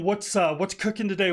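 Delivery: ordinary talk, nothing marked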